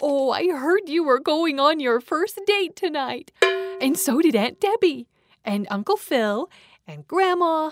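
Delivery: very high-pitched, excited exclaiming. A mother at the computer speaks to her teenage daughter: exclaiming. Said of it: "as mom exclaims".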